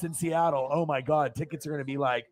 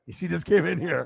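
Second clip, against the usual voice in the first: ordinary talk, nothing marked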